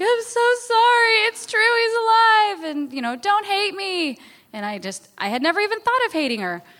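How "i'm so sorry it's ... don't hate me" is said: high-pitched, loud, tearful sobbing, breaking down crying. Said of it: "She broke down crying and was like".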